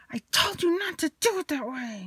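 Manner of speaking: put-on, very high-pitched yell. Retelling how a woman yelled at Paul: imitating her yelling at Paul. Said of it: "she yells at Paul".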